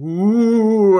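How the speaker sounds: high, loud, theatrical spooky ooh moan.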